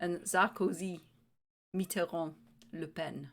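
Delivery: French-accented pronunciation. Saying French names after being told to use a French accent. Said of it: "say it with a French accent".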